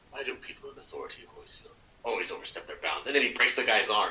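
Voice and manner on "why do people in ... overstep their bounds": very breathy whisper, all breath. Retelling a movie scene's line to another speaker: Keith David voice. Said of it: "in that Keith David voice".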